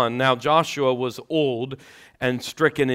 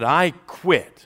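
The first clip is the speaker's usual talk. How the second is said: put-on firm, strong, emphatic and forceful delivery; 4 semitones higher than usual. Telling a story, a man finally speaks up on his 30th anniversary, in a strong voice. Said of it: "he said in a strong voice".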